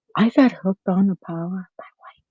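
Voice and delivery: barely audible, very soft, hushed half-whisper. Saying how she got hooked on a show: half-whispering. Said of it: "Girl, stop whispering".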